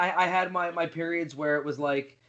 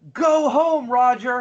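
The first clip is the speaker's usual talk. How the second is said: loud shrill screaming; 6 semitones higher, 7 dB louder than usual. Retelling shouting at a celebrity while walking past filming: imitating own scream. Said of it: "you just hear me screaming".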